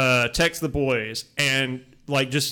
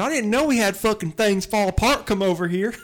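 fake, higher-pitched British accent; 7 semitones higher than usual. Acting out a racist British person: put-on British accent. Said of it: "this is a British person".

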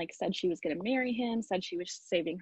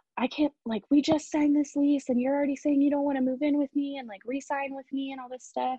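screaming, raised, high-pitched ranting yell; 5 semitones higher, 6 dB louder than usual. Retelling how a roommate reacted to the news: imitating a roommate screaming. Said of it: "she was screaming at me like".

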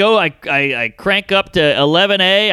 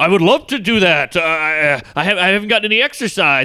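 put-on tipsy, drunk-sounding voice. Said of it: "Ari's half in the bag".

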